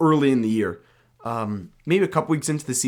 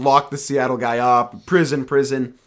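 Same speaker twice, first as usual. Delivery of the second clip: usual speaking voice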